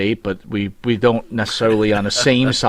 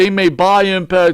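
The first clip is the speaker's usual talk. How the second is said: mocking put-on clueless voice, pitched higher; 9 semitones higher, 4 dB louder than usual. Mocking a wrestler's interview, acting like he doesn't know: imitating Tommy Dreamer acting clueless. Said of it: "He's trying to act like".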